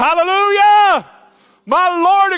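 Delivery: exultant joyful shout, very high and loud. Preaching a sermon, joyful shouting. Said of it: "excuse me for shouting".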